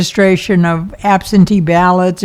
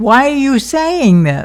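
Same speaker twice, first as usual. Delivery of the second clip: skeptical doubtful tone, higher; 6 semitones higher than usual. Retelling what a correctional officer said about her talk: imitating a doubtful officer's attitude. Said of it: "with a kind of attitude like".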